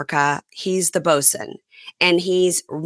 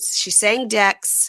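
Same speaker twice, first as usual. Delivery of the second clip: normal talking voice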